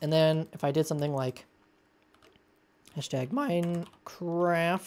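voice breaks and cracks on the word "hashtag". Explaining a Minecraft fill command in a tutorial: voice crack. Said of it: "sorry for the voice crack there".

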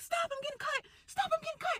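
high, frantic, panicked pleading.

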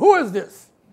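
put-on, loud voice full of attitude. Retelling picking up a phone that kept ringing, retelling own answer with attitude. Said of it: "I had the attitude".

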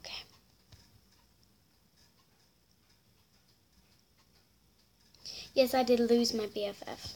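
agitated, trying to calm down. Speaking to her viewers after getting hacked and losing her bff, upset and agitated. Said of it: "I gotta calm down".

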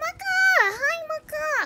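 ecstatic, very high, swooping joyful shrieks. Greeting maka during a game stream, happy screaming. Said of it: "I'm screaming".

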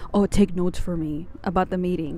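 acted-out, put-on whisper. Speaker retells what a man whispered in their ear before leaving, retelling a whisper. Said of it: "he like whispers again in my ear".

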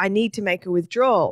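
plain

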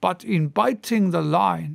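plain

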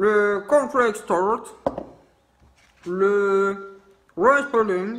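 put-on English accent, "le" drawn out. Speaker reading out item names, trying an english accent. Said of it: "Je vais essayer de le faire avec l'accent anglais".

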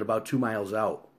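ordinary delivery

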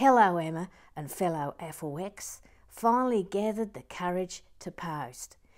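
loud, attempted put-on Australian accent. Reading out a post in a put-on australian accent. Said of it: "I'm now going to attempt an Australian accent".

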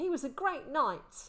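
cheerful. Narrator reads Will telling Holt he knew it, happy. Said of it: "Will said happily".

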